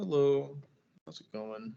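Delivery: dejected, lifeless, low-energy sad tone. Showing how tone changes a greeting, saying hello as sad. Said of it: "as sad".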